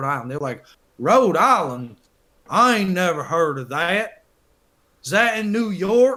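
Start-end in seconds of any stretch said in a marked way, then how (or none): 1.0-6.2 slow, high, drawn-out put-on Southern drawl. Retelling coworkers' questions about Rhode Island: imitating southern coworkers. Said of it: "Why'd you do a southern accent".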